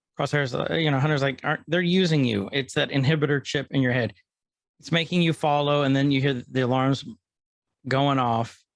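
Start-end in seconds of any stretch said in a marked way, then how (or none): none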